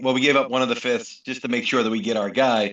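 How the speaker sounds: ordinary talk, nothing marked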